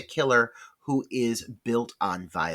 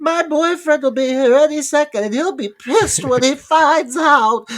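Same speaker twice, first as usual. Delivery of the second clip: mock frightened pleading, higher and louder; 9 dB louder than usual. Retelling a film scene, acting the cornered victim: imitating a terrified plea. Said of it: "she gets so, uh, meek and terrified".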